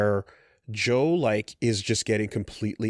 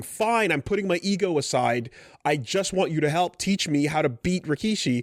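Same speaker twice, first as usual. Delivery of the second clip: mock, desperate begging, pleading tone; 6 semitones higher than usual. Recapping a story where a fighter begs the coach on his knees, imitating desperate begging. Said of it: "he's on his knees begging".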